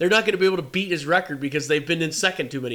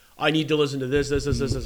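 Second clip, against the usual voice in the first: plain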